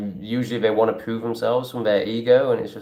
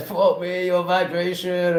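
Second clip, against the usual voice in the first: high, slow, overwhelmed groan. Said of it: "I'm just like".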